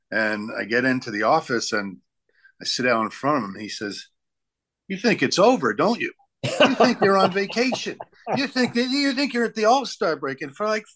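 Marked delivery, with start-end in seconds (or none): 4.9-10.4 very high-pitched, acted-out railing, ranting tirade. Retelling how a boss in the office railed at him: imitating a boss railing at him. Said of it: "he just rails up and down against me".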